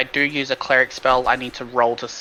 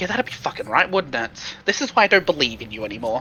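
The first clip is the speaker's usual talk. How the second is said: muttering under breath, faster. A player voicing their character after a healing attempt fails, muttering under breath. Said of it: "And under my breath".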